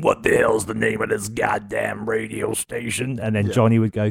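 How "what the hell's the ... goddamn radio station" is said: put-on gnarly, gruff, rough old man voice. Retelling a radio ident's opening line: imitating deep gruff old dude. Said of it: "this deep, gruff, gnarly, old-sounding dude going".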